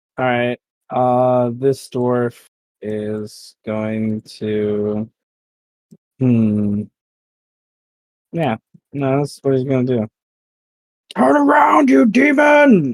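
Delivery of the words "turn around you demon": very high, furious shouted yell. A player's dwarf yells at Eros while shooting at Cash: yelling. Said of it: "He yells at Eros".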